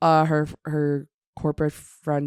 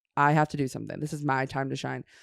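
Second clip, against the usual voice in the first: ordinary delivery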